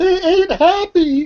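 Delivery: sobbing through tears, crying, very high-pitched. A freed captive, bound and gagged until now, telling the others, crying. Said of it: "and she starts crying".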